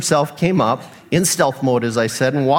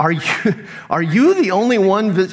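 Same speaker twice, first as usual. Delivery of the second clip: put-on frustration, much higher, slower; 4 semitones higher than usual. Retelling what one of them asked him, acting out frustration. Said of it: "Can you hear the frustration in this guy's voice?".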